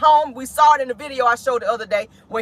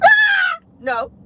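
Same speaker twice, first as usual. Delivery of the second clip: put-on child scream, higher pitch. Retelling how the child answered when asked about school, imitating a child screaming no. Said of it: "To bust out screaming and say no".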